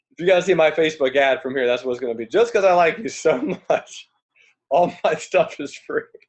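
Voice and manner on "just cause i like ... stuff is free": words broken up by laughter. Joking about a free sales pitch, laughing while talking. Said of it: "Sorry, I'm laughing".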